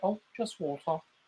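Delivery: put-on London accent. Retelling what a friend from England told a waitress: imitating a London accent. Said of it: "he had, like, a London accent".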